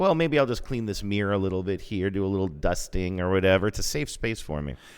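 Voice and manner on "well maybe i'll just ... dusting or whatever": ordinary delivery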